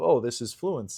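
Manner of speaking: plain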